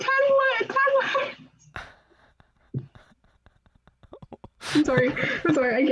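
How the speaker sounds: very high, drawn-out, giggling and laughing through words. Apologizing to the other speaker while laughing: laughing while talking. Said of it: "I need to stop laughing at you".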